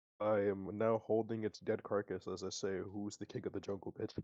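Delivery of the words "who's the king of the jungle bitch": cool, calm, soft, quick offhand delivery. Holding the dead carcass of a creature just killed, a player speaks with calm delivery. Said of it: "how calmly that was said".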